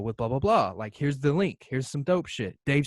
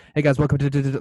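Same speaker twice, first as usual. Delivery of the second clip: put-on way-too-fast rushed speech, louder; 5 dB louder than usual. Retelling the first podcast recording attempt: imitating own way-too-fast talking. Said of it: "talking, like, way too fast".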